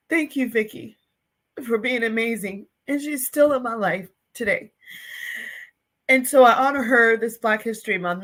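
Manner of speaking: tearful, emotional, crying with voice breaking. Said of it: "so I can stop crying".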